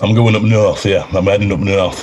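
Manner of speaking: strong, broad Yorkshire accent. Answering where they are heading for christmas: strong yorkshire accent. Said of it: "You sound like Ned Stark when you said that".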